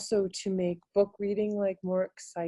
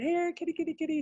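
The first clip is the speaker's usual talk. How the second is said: really high head-voice call; 9 semitones higher than usual. Teacher showing how to find head voice by calling a kitty: high head voice. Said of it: "you can call your kitty".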